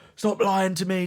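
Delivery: put-on shouting. Retelling how a teacher shouted during a telling-off: imitating a teacher shouting. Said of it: "proper just shouting at me".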